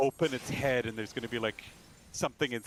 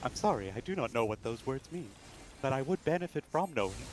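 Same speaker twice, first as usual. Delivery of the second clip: mock ai assistant-style voice. Repeating the other speaker's words back: imitating an AI response. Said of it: "Why did that sound like an A I response?".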